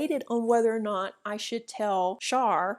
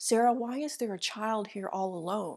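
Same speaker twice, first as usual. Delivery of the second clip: hushed, quiet half-whisper; 4 dB quieter than usual. Retelling what a woman half-whispered back to her, retelling a half-whisper. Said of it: "she whispers back to me".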